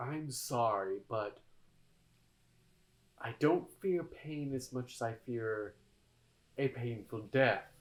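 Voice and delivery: soft, close-up, leaning-in half-whisper. Speaker recounts a man who leans over to answer, half-whispering. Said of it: "leans over and whispers".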